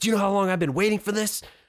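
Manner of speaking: furious, high, angry in-your-face yelling. Recounting a man who got in his face: imitating an angry yell. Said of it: "got in my face and started yelling".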